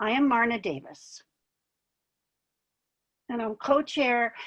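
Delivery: choking up, tearful voice, close to tears. Co-chair introduces herself to the fibromyalgia community, choking up. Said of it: "I didn't cry when I practiced this".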